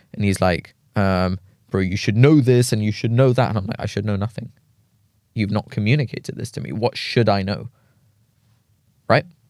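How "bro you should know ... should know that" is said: put-on raised voice, slower. Quoting a man who confronted the speaker, imitating him raising his voice. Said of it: "he was like raising his voice a little bit".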